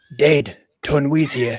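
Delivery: put-on old man voice. Doing a requested bit, calling out to Django: old Boba Fett voice. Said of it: "can I do old Boba Fett telling Django".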